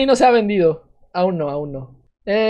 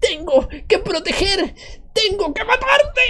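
very high, youthful little-guy voice; 9 semitones higher than usual. Doing the voice of a mushroom character: youthful little-guy voice. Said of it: "Una voz muy juvenil, muy de tío chiquito".

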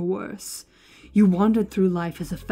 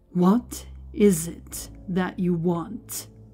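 drawn out as slowly as possible, very deliberate. A man questions another man a second time: very slow. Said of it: "Scriven spoke as slowly as possible".

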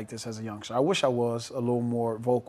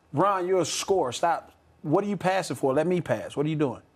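scolding, raised and pitched-up voice; 5 semitones higher than usual. Role-playing how to talk to a player on the team; raised voice, scolding. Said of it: "don't raise your voice".

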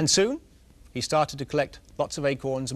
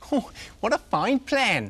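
very high, slow words through helpless laughter; 9 semitones higher, 3 dB louder than usual. He responds to a plan, laughing while speaking. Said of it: "he began to laugh until tears ran down his cheeks".

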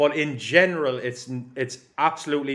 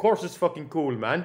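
awful, put-on Polish accent; 4 semitones higher than usual. Retelling what a Polish driver said back: terrible Polish accent. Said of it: "Terrible Polish accent".

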